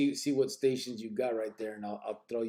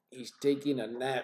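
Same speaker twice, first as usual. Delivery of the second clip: normal talking voice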